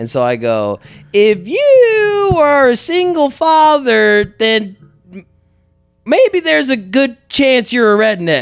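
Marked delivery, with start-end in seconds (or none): 1.1-8.4 slow, high voice with "you" stretched out. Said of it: "a Jeff Foxworthy voice".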